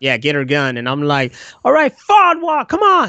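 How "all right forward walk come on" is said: very high, shrill, barked yelling. Retelling ordering everyone to get to work: imitating his own yelling. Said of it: "I screamed at her".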